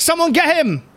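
very high-pitched voice with a bad German accent. Voicing the Silver Lady calling for the crew to grab someone: bad German accent. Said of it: "That's not a German accent".

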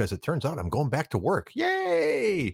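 genuinely glad "yay", sincere and very high. Sharing news of going back to work, a sincere, not sarcastic yay. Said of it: "that's not even a sarcastic yay".

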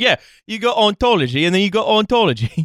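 put-on very heavy Essex accent. Joking about how a really essex person would talk, in an essex accent. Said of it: "A really, really Essex person".

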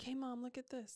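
put-on begging, high child-like voice.

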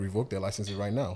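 ordinary delivery

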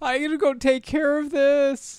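very high-pitched, whining voice. Recounting a scene, quoting the man in it: imitating a whiny voice. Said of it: "I like his whiny".

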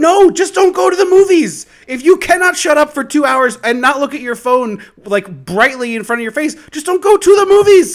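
very high, loud, furious ranting.

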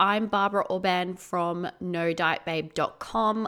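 ordinary delivery

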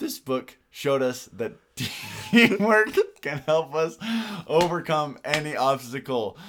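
very loud, slow talk through laughter. Opening the podcast episode, the host speaks while laughing. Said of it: "Sorry for laughing".

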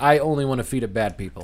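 ordinary delivery

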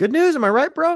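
very high, sweet, chirpy, cheery churchy tone.

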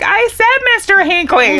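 high-pitched, loud, upset, insistent tone.

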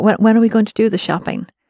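normal talking voice

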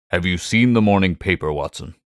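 plain

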